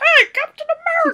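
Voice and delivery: very loud, high, shrill, bad Boston accent. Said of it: "Is that what Boston people sound like to you?".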